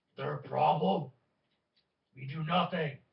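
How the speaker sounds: rough, gruff speech in broken Common. Narrating voices the party overhears, in gruff broken Common. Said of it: "kind of gruff common".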